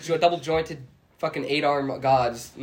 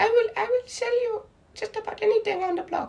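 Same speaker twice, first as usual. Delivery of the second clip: not very good fake Indian accent, much higher. Retelling what a guy said when he talked to him, in a not very good Indian accent. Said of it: "I can't do a very good Indian accent".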